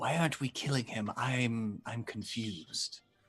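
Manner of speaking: slow, very quiet hushed stage whisper. Voicing a character who bends over to Elsie: loud whisper. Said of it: "loudly whispers".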